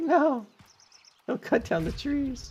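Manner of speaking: tiny, very high, squeaky cat voice. Voicing the speaker's cat protesting the tree cutting: voicing my cat. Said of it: "and he's like".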